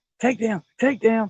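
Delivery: high hollering yell. Retelling watching a live stream and seeing a bite: imitating yelling at the tv. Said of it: "but I'm yelling it".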